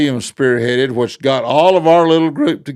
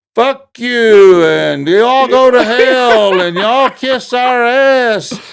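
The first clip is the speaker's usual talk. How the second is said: mock, shrill, very high, slow, drawn-out hollering; 10 semitones higher, 5 dB louder than usual. Retelling what people at a school board meeting were hollering: imitating people hollering. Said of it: "the people that were hollering".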